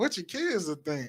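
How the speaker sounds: soft, play-acted judgmental, disapproving tone. Retelling how people question a woman about doing OnlyFans, mimicking a judgy tone. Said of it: "And they said in a judgy tone".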